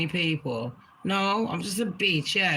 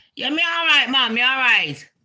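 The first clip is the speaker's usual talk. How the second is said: put-on Caribbean patois, higher, louder, faster; 7 semitones higher, 7 dB louder than usual. Retelling a chat with a man, answering in a put-on Caribbean accent. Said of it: "So I have to bust out my Caribbean".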